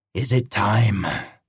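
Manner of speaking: harsh, raspy monster voice. A monster speaks to a sweating man edging toward an alarm: raspy monster voice. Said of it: "the monster rasped".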